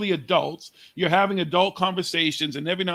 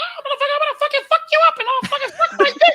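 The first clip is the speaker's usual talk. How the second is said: put-on very high, loud squeaky kid voice; 6 dB louder than usual. Complaining about games kids play, speaker imitates kids trash-talking: kids' Minnie Mouse voice. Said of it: "hear these little Minnie Mouse fucking voices like".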